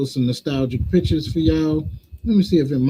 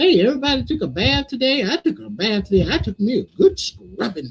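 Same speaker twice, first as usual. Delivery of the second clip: cheery, sweet, pitched-up teacher voice; 7 semitones higher than usual. Retelling how a sweet old substitute teacher greeted the class: imitating Miss Thompson. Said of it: "she'd be like".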